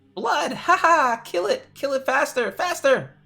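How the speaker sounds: very high, loud, shrill blurted out. Voicing Chuckleblutz as it blurts out while watching the redcaps run around, in Chuckleblutz's shrill voice. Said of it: "blurts out in one of the shrill voices".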